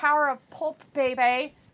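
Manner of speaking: plain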